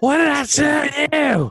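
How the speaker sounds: put-on loud, drunken yelling. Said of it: "that drunk dad".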